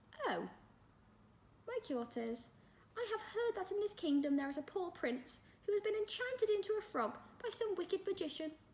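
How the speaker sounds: very high fairy-tale princess voice. Narrating Jodie as she starts pretending to be a fairy-tale princess: high princess voice. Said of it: "she said in a high voice".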